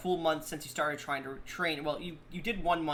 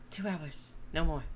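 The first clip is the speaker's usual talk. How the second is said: confiding, voiced stage whisper. Voicing a character who grabs someone leaving, half-whispering in his ear. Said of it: "whispers in your ear".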